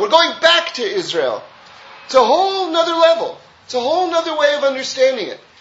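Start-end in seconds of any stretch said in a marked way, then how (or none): 0.0-1.4 stress on "back" with a falling tune. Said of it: "We're not going to Israel".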